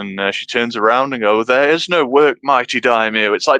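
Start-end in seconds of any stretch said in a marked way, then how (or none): 1.5-3.3 put-on exasperated, incredulous, indignant tone. Retelling a line from a show's interrogation scene: imitating an exasperated retort. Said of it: "delivered with such fucking, like, who, who the fuck are you telling?".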